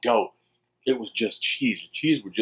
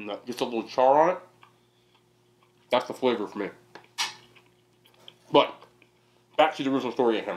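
speaking while chewing, mouth full. Eating while telling a story: talking with mouth full. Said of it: "I'm sorry for talking my mouth full".

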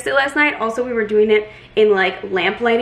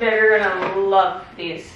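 deadpan, flat, dry sarcastic delivery; 2 semitones lower than usual. Trying on a new Amazon purchase: sarcastic. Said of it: "That was sarcasm".

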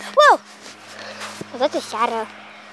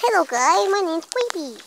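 character voice with the pitch raised; 5 semitones higher than usual. Video maker makes the Creeper greet viewers, in a Creeper voice. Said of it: "I'm just changing my voice".

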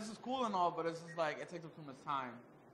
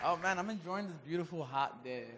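full-on sarcasm, meaning the opposite. A guest greeted by the host on a hot day, sarcastic. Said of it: "that was full sarcasm".

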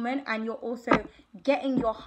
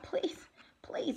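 whispered, soft, breathy pleading; 5 semitones higher, 9 dB quieter than usual. Acting out one person's plea to another who refuses to share, imitating someone begging. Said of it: "begging energy".

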